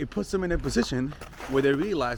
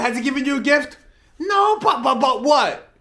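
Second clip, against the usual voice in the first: shouting, higher and louder; 11 semitones higher, 10 dB louder than usual. Questioning viewers about giving him a gift: yelling. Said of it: "Why you gotta scream at us?".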